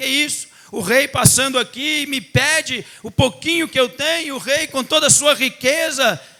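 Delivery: irritated grumbling. Retelling a parable as the beggar grumbles at the king: imitating an irritated beggar.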